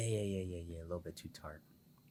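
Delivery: sexy delivery. Asked if the lime water is too tart, he answers, sounding sexy. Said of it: "said that shit sexy as hell".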